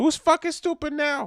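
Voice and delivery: shrill, very high, loud woman's voice. Imagining his wife's angry reaction to the recording: impression of his wife. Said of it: "That's a good impression of her".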